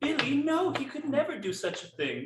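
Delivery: very high-pitched put-on old lady llama voice. Playing a llama character in a scene with others, older lady llama voice. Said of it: "this is a older feminine llama".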